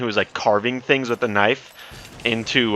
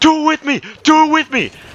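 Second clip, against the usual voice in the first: mock, very high, shrill, loud scream; 5 dB louder than usual. Retelling a stranger on the bus screaming at people: imitating a man screaming.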